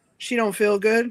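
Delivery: ordinary talk, nothing marked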